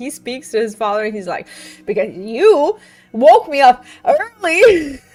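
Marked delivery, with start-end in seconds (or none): 1.8-4.9 put-on anger, higher, louder, slower. Retelling what the overstimulated son says to his father, imitating his angry voice. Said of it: "there was like anger in his voice".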